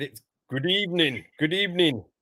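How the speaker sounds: ordinary delivery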